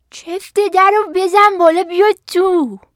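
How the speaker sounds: put-on thin, high voice. Reading a fairy tale, the wolf answers the girl at the door, faking a thin voice. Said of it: "گرگ صدایش را نازک کرد".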